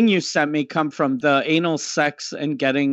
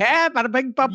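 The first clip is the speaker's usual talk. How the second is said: tossed-off fake Hindi babble, voice pitched up; 8 semitones higher than usual. Retelling what the other speaker did: imitating someone's fake hindi. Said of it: "and you went".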